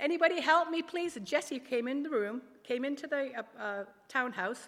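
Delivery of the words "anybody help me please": mock, loud, high shout. Retelling calling for help when no one was around, re-enacting a shout for help. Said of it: "And then I shouted".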